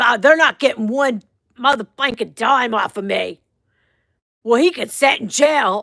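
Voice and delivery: put-on raspy, hoarse woman's voice. A speaker imitates a woman from their story: raspy woman's voice. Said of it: "she had like a raspy voice".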